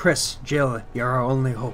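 put-on aggressively heavy, laid-on-thick Irish accent. Wishing O'Brien had a heavy Irish accent, speaker acts out his line that way. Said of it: "an aggressively heavy Irish accent".

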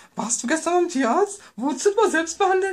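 high, mocking dumb-sounding voice.

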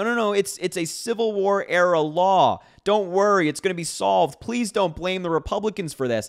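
mock panicked voice. Mocking a clip just played, imitating a panicked Sean Hannity. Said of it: "You can really hear the panic in Sean Hannity's voice".

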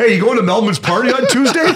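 eager delivery, pitched high and loud.

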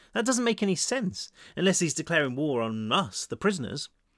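ordinary delivery, nothing marked

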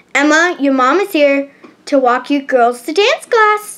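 ordinary delivery, nothing marked

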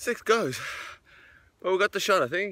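out of breath, very high. Right after running through for a drone shot, out of breath. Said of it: "I'm out of breath".

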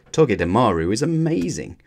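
ordinary delivery, nothing marked

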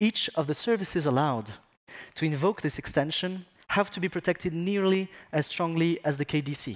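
slow, mock-perfect English accent. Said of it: "un accent anglais parfait".

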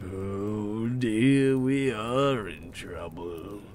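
deep, slow delivery.

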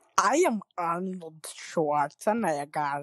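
put-on Russian-accented English. While others talk about [name]'s impression and voting for him, do an Arnold Schwarzenegger impression. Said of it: "That sounds like a dead ringer".

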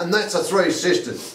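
big, loud, booming voice pitched high. Retelling what a woman said when she popped up, in a big voice. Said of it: "she popped up in a big voice".

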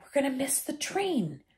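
soft half-whisper. Two boys cannot get through a sealed gateway; one half-whispers to the other. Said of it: "Ron whispered".

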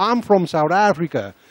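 put-on American accent. Retelling answering a new york waitress's question, in an american accent. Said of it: "met so'n Amerikaanse accent".

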